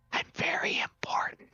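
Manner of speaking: soft, hushed whisper, half under the breath. Retelling what he listed about himself, quoting his aside: whispering. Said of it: "he whispers".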